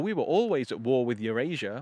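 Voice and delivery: dry, ironic, sardonic sarcasm. Quoting what people say when the news switches its story: imitating a sardonic remark. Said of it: "in quite a sardonic, sarcastic way".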